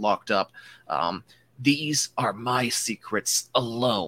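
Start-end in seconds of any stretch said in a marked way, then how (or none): 1.6-4.1 threatening whispered voice. Voicing a Jedi locked in combat, whispering into an enemy's ear: whispering in character. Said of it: "he whispers in your ear".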